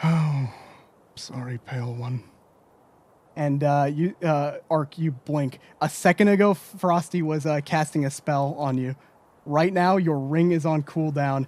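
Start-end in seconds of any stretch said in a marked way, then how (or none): 0.0-2.2 smug whisper, lower pitch. Voicing a character backing away with a very smug smile: smug whisper. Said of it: "with a very smug smile, uh, he whispers".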